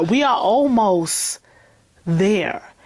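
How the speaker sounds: slow, drawn-out, every word stretched.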